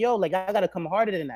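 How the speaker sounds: usual speaking voice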